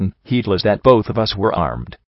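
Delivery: ordinary delivery, nothing marked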